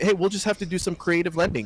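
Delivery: normal talking voice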